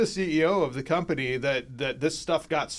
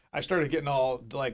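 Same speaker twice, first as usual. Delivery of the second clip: ordinary delivery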